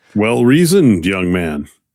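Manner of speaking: talking down, patronizing. In a role-play, answering an excited squire's claims, patronizing. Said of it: "So patronizing".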